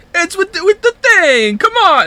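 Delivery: very high, loud put-on Brooklyn accent. Trying an impression after being asked: Brooklyn accent. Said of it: "Just do a Brooklyn accent".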